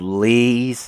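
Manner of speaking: long drawn-out "please", stretched on the e. Reading a character's plea to stop aloud: drawn-out please. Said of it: "I just said that with eight E's".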